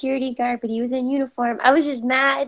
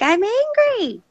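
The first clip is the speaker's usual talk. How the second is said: high, mock adorably frustrated, cute angry tone; 8 semitones higher, 4 dB louder than usual. Retelling what she says when she is mad at a guy: imitating her own angry protest. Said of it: "my ex would just laugh at me, and I'm just like".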